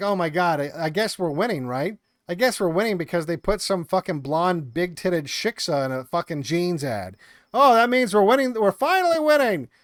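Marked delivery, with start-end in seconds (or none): none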